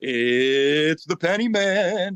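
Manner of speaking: eerie, very slow, drawling creepy voice. Recalling how the speaker used to intro their videos, creepy voice. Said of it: "introing the videos just because I thought it was funny with this creepy voice".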